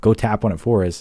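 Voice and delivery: ordinary talk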